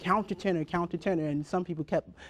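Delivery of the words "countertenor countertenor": usual speaking voice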